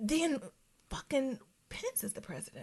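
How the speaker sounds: very quiet whisper under the breath. Discussing getting the president removed, the speaker adds one remark, whispering. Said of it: "I'm whispering that".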